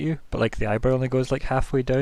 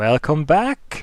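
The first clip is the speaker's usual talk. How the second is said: speaking through a little chuckle; 3 semitones higher, 4 dB louder than usual. Voicing an old android who greets returning players, chuckling to himself. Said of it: "he just kind of chuckles to himself, like".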